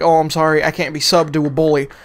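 ordinary talk, nothing marked

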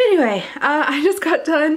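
out of breath. Talking to the camera after running up a small flight of stairs, out of breath. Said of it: "I have to catch my breath".

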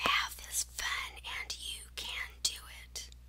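whispering. Opening a math lesson video for viewers, whispering.

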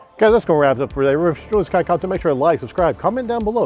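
very fast, rattled-off delivery. Coffee video host wrapping up and asking viewers to subscribe, talking really fast. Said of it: "I'm talking really fast".

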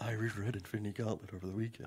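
mock-sensuous soft voice. Teasing the co-host by repeating his line back: mocking a soft sensuous voice. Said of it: "Sensuous thing you're doing".

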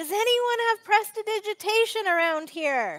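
loud, high-pitched shout carrying outward. A player's character, whose heirloom puppets are ruined with mud, calls out, shouting. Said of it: "I'm shouting at people".

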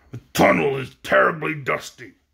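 angry, irritated, growled complaint. The leader nearing the Emerald City coughs in the tunnel and growls angrily. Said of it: "he growled angrily".

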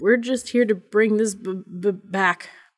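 stammered words. Reading a character's line to a crouching old homeless man, stammering. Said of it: "Peter stammered".

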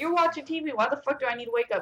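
play-acted furious, fed-up, high angry tone. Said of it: "I was so mad".

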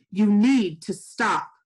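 rough, loud and slow. A cop puffs up beside the narrator, who keeps walking, gruffly. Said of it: "he said gruffly".

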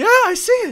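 very high, loud, excited cheer.

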